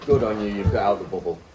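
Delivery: ordinary delivery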